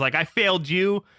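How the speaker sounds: imitated crying, tearful voice. Retelling what a crying mother said to the speaker: imitating someone crying. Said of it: "crying to me".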